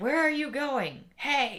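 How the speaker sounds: loud, drawn-out shout. Retelling how the gym teacher called after them: imitating someone yelling. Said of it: "I heard the gym teacher yelling at me".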